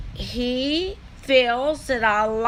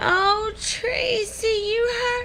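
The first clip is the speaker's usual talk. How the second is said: mock Southern accent, much higher, slower; 11 semitones higher than usual. Speaker retells the other person's parody of their complaint, in a mocking put-on southern voice. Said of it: "Using a southern voice".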